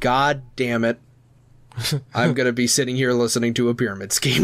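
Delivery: ordinary delivery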